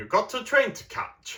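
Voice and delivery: very high-pitched voice with English accent. Narrating Doc Ock going after Spider-Man on the train, English-accented Doc Ock voice. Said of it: "Try to say it in his English accent".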